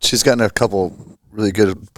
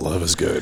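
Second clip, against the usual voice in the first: put-on baritone voice with a stuttering opening; 4 semitones lower, 5 dB quieter than usual. Answering praise about love at the business, in a put-on baritone voice. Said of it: "Don't do that voice".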